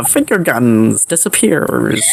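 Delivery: ordinary talk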